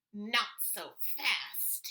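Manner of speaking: hissed, nasty, unpleasant voice. Reading a picture book aloud, the mean new teacher appearing: hissed unpleasant voice. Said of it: "hissed an unpleasant voice".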